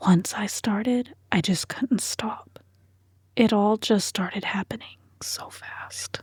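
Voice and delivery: imitated whisper. Retelling a confession after exhaling, trying again: imitating a whisper. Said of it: "You're supposed to whisper".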